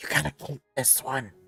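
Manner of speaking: loud stage whisper. Voicing a character who leans next to Regina: stage whisper. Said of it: "stage whispers".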